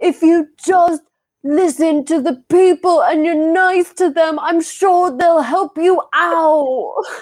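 sobbing, tender-hearted, high, tearful pleading tone. Bear-hugging the creature and hitting it with a club, crying while pleading.

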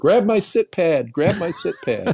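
play-acted high yell, each word stretched. Retelling own yelling in the rapids: retelling a yell. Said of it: "and I'm yelling".

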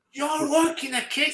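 surprised, high-pitched, rising intonation.

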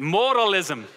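modalism in a put-on Irish accent. Saying the word for the listeners: Irish accent. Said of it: "Try to say it with an Irish accent".

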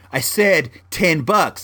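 ordinary talk

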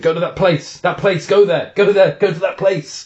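mock fervent urging. Retelling a coach encouraging someone on a hard timed effort: imitating intense encouragement. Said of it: "with massive conviction".

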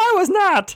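put-on goofy puppet bear voice. Retelling a flustered reply heard in a blooper reel: Fozzie Bear voice. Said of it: "you hear Fozzie Bear go".

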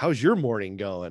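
snarky tone. Retelling a greeting to a coworker in a mask: retelling own snarky line. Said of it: "kinda being snarky a little bit".

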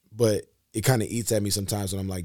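ordinary delivery

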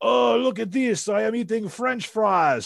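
bad, high-pitched, put-on French accent. Recalling talking to two young kids years ago, bad French accent. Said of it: "I did the worst French accent".

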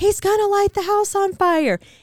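mock very high-pitched, shrill scream of alarm. Recounting jumping up in bed in a dark room to warn everyone, retelling a yell. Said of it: "start yelling".

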